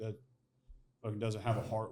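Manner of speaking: ordinary talk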